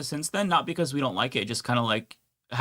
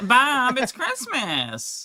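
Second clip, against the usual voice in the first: very high pitch swooping around; 10 semitones higher than usual. Trying out the character's line after the other speaker's attempt: Linda Belcher voice. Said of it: "I get the Bob".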